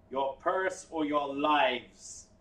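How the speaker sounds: huge, resounding, booming voice. A game narrator voices a voice heard across the whole ocean: booming voice. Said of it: "A booming voice jets out and vibrates the entire ocean".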